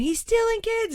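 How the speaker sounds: mock screamed alarm, very high-pitched scream. Retelling a wrestling match crowd moment: imitating own past screaming. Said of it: "I started screaming".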